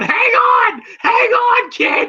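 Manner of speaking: desperate pleading, high-pitched and drawn out. Retelling a fight scene, imitating Mickey's desperate voice. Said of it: "the desperation in Mickey's voice going".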